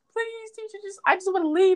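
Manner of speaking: mock, very high, crying, tearful voice. Retelling begging a teacher to leave class, imitating own crying plea. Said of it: "I started crying".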